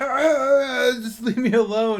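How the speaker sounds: slow, very high, drawn-out giant yelling voice. Voicing a giant freaked out by attacks in a game: yelling giant voice. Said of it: "You hear him just like yelling".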